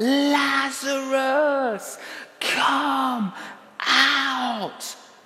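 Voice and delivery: loud, high, commanding shout, last word stretched. Preaching about Jesus raising Lazarus, acting out the command, retelling a loud shout. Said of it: "No, a loud shout".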